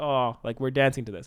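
ordinary talk, nothing marked

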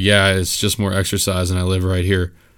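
casual, direct, matter-of-fact, nonchalant delivery. Retelling a stranger's answer about riding the bike: imitating a nonchalant reply. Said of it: "the most direct, like, nonchalant".

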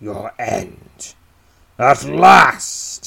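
very slow, creaky, loud, rough, drawn-out snarl. The narrator voices the undead goblin chieftain leveling a spear at you: snarling. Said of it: "He snarls".

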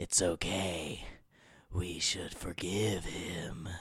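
very slow, low, drawn-out evil voice. Retelling a film's opening scene, quoting the villain: evil Alec Baldwin voice. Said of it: "He's doing his evil Alec Baldwin voice".

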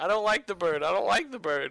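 put-on screaming, shrill and loud, said twice. Retelling a safari drive where she hops on the console, imitating her screaming. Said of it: "starts screaming".

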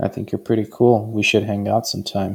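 sexy, low, sultry dropped-down tone. Demonstrating how to tell someone you find them attractive, in a low sexy tone. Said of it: "you took the low tone there".

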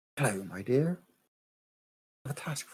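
gentle, soft, hushed half-whisper. As a voice appearing in someone's head, speak in a soft half-whisper. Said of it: "it's just like a soft whisper".

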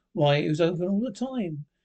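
ordinary delivery

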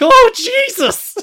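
shrill, very high, loud surprised cry. Retelling a commentator's shocked reaction: imitating high-pitched Rick and Morty voice. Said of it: "that's how high-pitched he becomes".

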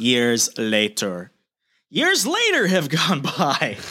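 drawn-out words with a swooping tune. Reading the next page of a story aloud in the SpongeBob narrator voice. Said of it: "I imagine this in like the SpongeBob narrator voice".

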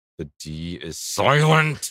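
mock anger, dragged out very slowly. Warning others that the d is silent: mock angry. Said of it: "Why are you so angry when you say that?".

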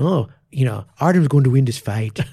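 terrible fake Irish brogue. Retelling a bet with a student, imitating Pierce's Irish accent. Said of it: "that's a terrible Irish accent".

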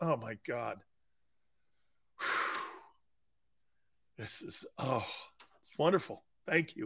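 whispered, breathy, overwhelmed, emotional. The speaker reacts to praise on his Twitter page, mock-emotional. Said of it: "I'm getting a little emotional here".

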